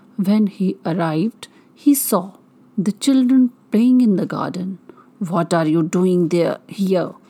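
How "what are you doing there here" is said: very rough, gruff voice of a giant. Narrator reading the story as the giant finds children in his garden, very gruff voice. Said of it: "he cried in a very gruff voice".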